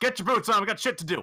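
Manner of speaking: high, loud yelled voice. A player's character appears in the captain's quarters and screams at the captain, screaming. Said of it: "I'm going to scream at the captain".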